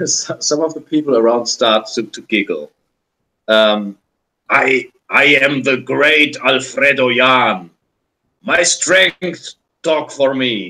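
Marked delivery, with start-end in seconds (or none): 3.5-10.7 growling voice, much slower. Game master voicing a giant who confronts the players' character, growling voice. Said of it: "Because she is harassed by a blonde bearded giant wearing a broadsword in one hand, and he has a bronze chest plate. ... and he says with a growling voice".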